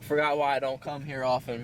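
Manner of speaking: usual speaking voice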